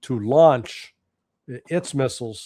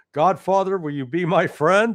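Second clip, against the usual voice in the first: put-on timid, meek, sheepish, pitched-up tone; 6 semitones higher than usual. Acting out a country approaching others for help: mock sheepish plea. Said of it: "a sheepish Iran approached".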